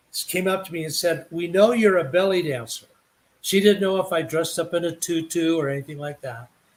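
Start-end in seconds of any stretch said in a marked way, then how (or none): none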